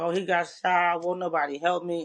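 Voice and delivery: acted-out, tearful, desperate crying. Retelling a phone call from his crying girlfriend: imitating someone crying. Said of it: "she's crying".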